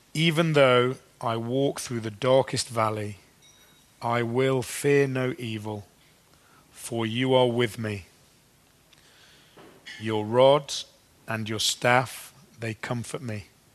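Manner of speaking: slow, unhurried reading aloud.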